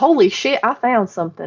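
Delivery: put-on Texas accent over generic American speech. Voicing a man from Michigan's reaction, in a put-on Texas accent. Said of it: "my generic American accent is Texas".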